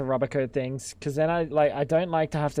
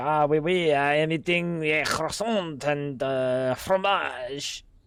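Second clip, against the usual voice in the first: slow, drawn-out, fake put-on French accent. Speaker acts out a french man answering what he's eating, mock french accent. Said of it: "Fucking French, man".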